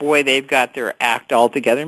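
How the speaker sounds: normal talking voice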